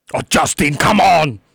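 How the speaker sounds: put-on thick German accent. Coaxed into imitating a German grandmother, in a thick German accent. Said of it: "A very thick German accent".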